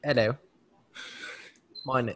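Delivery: put-on British accent, laid on for show. Answering a request to sound like a designer: put-on British accent. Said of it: "if they have a British accent".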